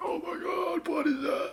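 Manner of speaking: high, awed whisper with a gasp.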